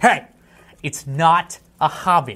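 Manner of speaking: indignant, retorting tone. Retelling own reply to a joke from the pre-show: imitating own indignant retort. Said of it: "I got all indignant".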